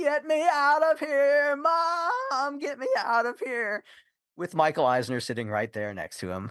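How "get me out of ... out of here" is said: mock frantic child's wail, very high, slow, drawn-out. Retelling how a frightened boy screamed: imitating a child screaming. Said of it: "he started screaming at the top of his lungs".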